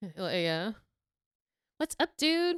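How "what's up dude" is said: high, put-on Valley Girl accent. Discussing which American accents people imitate, speaker demonstrates: Valley Girl voice. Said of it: "like a Valley Girl".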